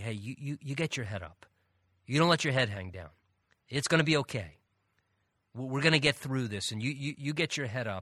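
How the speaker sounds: fatherly, encouraging dad-style voice. Acting out someone lifting a discouraged person's chin: fatherly voice. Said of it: "in kind of this fatherly voice or this encouraging way".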